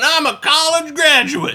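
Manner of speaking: very high, shrill, stretched-out screaming. Retelling a heated man's outburst in a story, retelling a scream. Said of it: "And he starts screaming".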